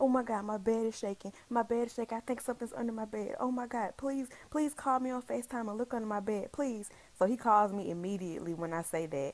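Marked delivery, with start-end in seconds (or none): 0.0-6.9 put-on panicked voice. Telling how she called Blake, acting out her own panic. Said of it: "And I'm panicking".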